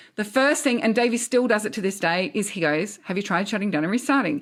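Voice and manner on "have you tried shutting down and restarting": put-on, somewhat sarcastic tone. Imitating how Davey answers computer complaints: imitating Davey, sarcastic. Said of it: "he says it kind of sarcastically".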